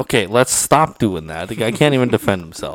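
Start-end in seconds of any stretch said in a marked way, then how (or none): none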